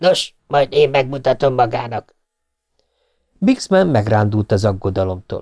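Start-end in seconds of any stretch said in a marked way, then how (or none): 0.0-2.1 spoken in anger. The tycoon answers Bixman, angry. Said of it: "Fairbanks dühösen mondta".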